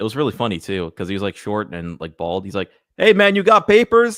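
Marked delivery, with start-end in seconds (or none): 3.0-4.2 put-on very loud, very high voice with Brazilian accent. Retelling meeting a stranger, the speaker quotes him in a Brazilian accent. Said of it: "this Brazilian guy walks up to me with his like accent".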